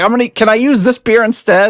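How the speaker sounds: play-acted high-pitched yell. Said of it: "she was yelling at me 'cause she's like".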